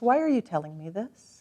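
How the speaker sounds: plain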